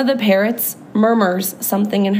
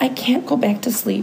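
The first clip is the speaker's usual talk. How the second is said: plain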